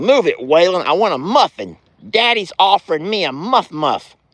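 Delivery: plain, unaltered voice speaking as an animal. Feeding the animals, voicing Chuck wanting a muffin: voicing Chuck the pet. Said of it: "He's like".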